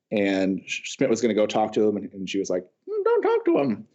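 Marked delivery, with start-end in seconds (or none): 2.8-3.7 very high-pitched, slow, deliberate, drawn-out delivery. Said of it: "that was my CC impression".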